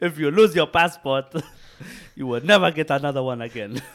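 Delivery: mock Nigerian accent, Lagos style.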